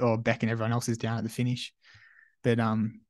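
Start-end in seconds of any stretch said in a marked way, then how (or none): none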